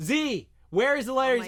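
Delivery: re-enacted yell. Retelling searching for Z at the con: imitating own past yelling. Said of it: "Why are you yelling?".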